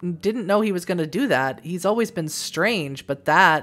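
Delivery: ordinary delivery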